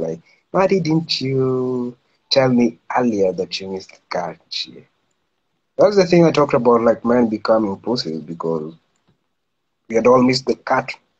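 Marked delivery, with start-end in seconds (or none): 0.5-4.8 slow, gentle coaxing voice with drawn-out "you". Retelling how the lecturer answered a student: imitating a softened voice. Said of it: "he softened his voice".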